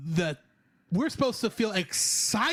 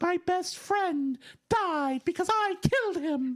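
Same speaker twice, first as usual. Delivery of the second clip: high, put-on unicorn character voice; 7 semitones higher than usual. Ranting about a character's choices to a co-host, in the unicorn voice. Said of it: "I'm using the unicorn voice for this".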